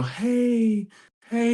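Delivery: very high, soothing little coo, hey stretched long. Describing the sound a grandmother and mother make to calm a crying baby, imitating a soothing coo. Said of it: "this almost like little coo sound that calms".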